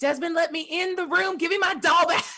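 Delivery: mild, shouty yell in a character voice. Voicing a character casting a spell at a door: yelling in character. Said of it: "she just yells".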